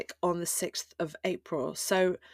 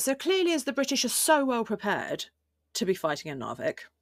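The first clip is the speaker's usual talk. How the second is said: openly sarcastic with a swooping tone; 4 semitones higher than usual. Presenter narrating a military campaign for listeners, in a sarcastic tone. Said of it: "as you can hear the sarcasm in my voice".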